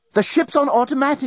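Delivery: out of breath, panting, very high-pitched voice. A journalist bursts onto the captain's bridge and reports, panting. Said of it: "he panted".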